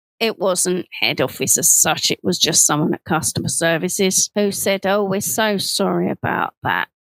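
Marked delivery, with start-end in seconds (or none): 4.9-6.8 mock, sarcastic, insincere tone. Retelling what a customer services person said on the phone: imitating a sarcastic apology. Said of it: "no compassion. It was just, like, sarcastic".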